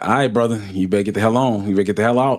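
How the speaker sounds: brash, mouthy, taunting voice. Retelling own trash talk at a game character during gameplay: retelling own trash talk. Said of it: "I was just talking shit during that whole chat".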